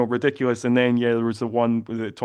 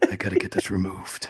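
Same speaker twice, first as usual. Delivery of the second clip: put-on threatening whisper, lower and quieter; 4 semitones lower, 5 dB quieter than usual. Imagining a star reading online trivia: Steven Seagal threatening whisper. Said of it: "performative, uh, threatening whisper that he does".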